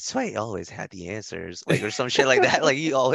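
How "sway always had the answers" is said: put-on creaky, rough-edged pop-star tone. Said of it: "the most [name]-esque tone".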